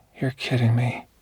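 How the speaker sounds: weak, stunned, disbelieving, faint, barely-there voice. Reading a story, the narrator voices a character's stunned reply, said faintly. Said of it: "Ellery said faintly".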